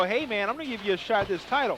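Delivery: ordinary delivery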